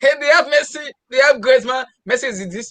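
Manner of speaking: mock high-pitched excited shouting. Retelling what the other speaker said about Barcelona: imitating someone shouting. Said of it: "We're shouting".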